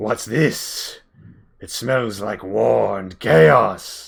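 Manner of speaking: rough, guttural, growling beast voice. Voicing the matriarch after she sniffs the air, guttural voice. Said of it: "she says in a in a guttural rendition".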